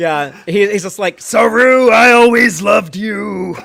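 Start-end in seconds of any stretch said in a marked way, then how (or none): 1.2-3.6 very slow, menacing, scary monster voice. Imagining a tar monster objecting at a wedding: scary monster voice. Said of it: "It has to be scary monster voice".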